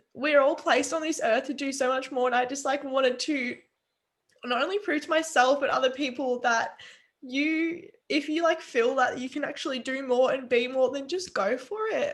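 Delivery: high-pitched, tearful, emotional voice.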